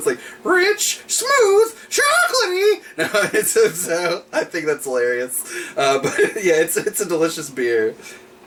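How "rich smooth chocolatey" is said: very high, squealing cartoon bird voice. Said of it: "That's my Cocoa Puff bird voice".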